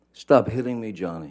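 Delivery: mock upset, high, freaked-out screaming. Recounting a woman's screams at johnny from twenty feet away, imitating a freaked-out, high-pitched scream. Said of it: "she's screaming in in her best um, freaked out, upset voice, high pitched".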